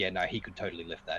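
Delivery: plain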